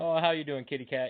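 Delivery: put-on soft sincere voice. Retelling how the client talked to her cat: imitating quiet sincere talk. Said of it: "Like a sincere".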